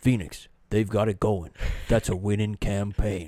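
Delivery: TV analyst-style broadcaster delivery. Imitating an announcer talking going into the break: Mark Jackson voice. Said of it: "in my best Mark Jackson".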